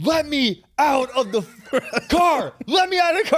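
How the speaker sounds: very high-pitched, loud, frantic pleading yell. Retelling being in the back seat while another guy cried up front: retelling frantic yelling. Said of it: "Like I'm losing my mind".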